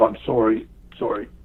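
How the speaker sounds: murmured, whispered under the breath to himself. Speaker recounting a man who hit him giving a nod, retelling a whispered apology. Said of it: "he kind of kind of whispered to himself".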